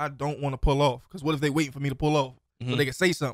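ordinary delivery

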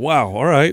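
mock chuckling through the words, amused. Retelling a reaction to a baby's aggressive excitement while feeding: retelling own laughing reply. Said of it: "and I'm laughing, like".

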